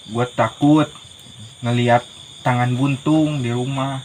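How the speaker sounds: ordinary talk, nothing marked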